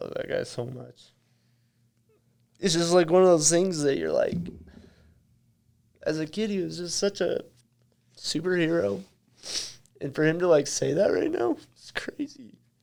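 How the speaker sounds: tearful voice, crying while talking. A guest on a show talks about his childhood hero's words; crying. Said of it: "I can't believe I'm crying right now".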